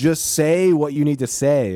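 high, fed-up, exasperated shouted scream. Retelling an anime scene, imitating One Punch Man screaming. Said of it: "and he finally screams, like".

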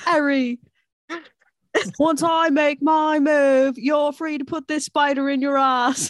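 clumsy, high, bad fake British accent. Joking with friends about the spider scene, addressing Harry: bad fake accent. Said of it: "It's such a bad fucking accent".

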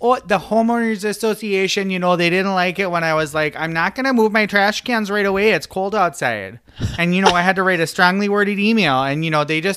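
rambling, chatty, put-on Minnesota accent. Acting out what she was going on about, in a minnesota accent. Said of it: "I have the Minnesota accent on".

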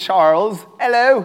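put-on British accent. Greeting a volunteer who came up front: put-on british accent. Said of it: "pulls a British accent out of me".

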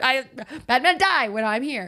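put-on panicked voice. Imagining Ethel's last-resort outburst at Betty, mock-panicked Ethel impression. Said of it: "She just panics like this is her last resort".

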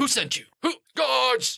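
shrill, very high-pitched shouting. A game master voicing a man who starts yelling for guards. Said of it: "He starts yelling for guards".

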